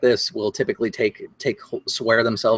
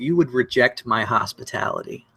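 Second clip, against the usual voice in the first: sneering, haughty noble voice, putting on airs. Voicing a noble who sneers at the listener, Lord Gunn, sneering. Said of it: "So he kind of sneers at you".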